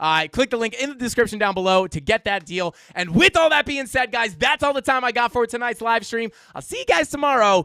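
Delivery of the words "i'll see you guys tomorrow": cracking, breaking voice, cracking up high. Signing off at the end of a live stream, voice cracking. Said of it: "My voice just cracked".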